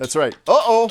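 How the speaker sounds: ordinary delivery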